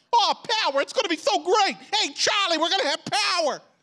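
put-on New York accent, very high pitch. Retelling a bible scene, voicing the disciples in a put-on new york accent. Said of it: "I've been in New York City".

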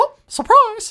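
very high, loud, squeaky cartoon voice. Describing a background guy in a movie scene: Mickey Mouse voice. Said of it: "In like a fucking Mickey Mouse voice".

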